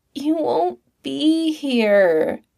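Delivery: very slow, high-pitched, dragged-out whine. A narrator reads a character objecting, whining. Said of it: "he whined".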